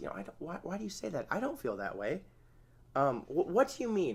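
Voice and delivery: pretty calm, open inquiring tone, animated pitch. Demonstrating how to respond to criticism, the speaker asks questions in a calm voice. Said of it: "Say that in a pretty calm voice".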